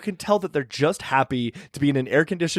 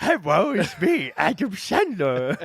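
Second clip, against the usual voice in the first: put-on puppet toddler voice, higher pitch; 4 semitones higher than usual. Retrying the impression, called a puppet three-year-old: puppet Adam Sandler voice. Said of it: "Puppet Adam Sandler, who's also three years old".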